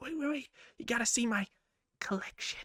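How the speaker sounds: cringey, creepy, breathy put-on character whisper. Doing an impression of a character from a show: creepy character voice. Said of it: "that was me doing an impression of this character from the show. Really cringe and really creepy".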